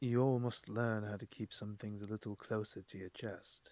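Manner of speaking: low, dropped, very hushed murmur. Player speaking in character to the group after passing others, lower voice. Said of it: "in a lower voice be like".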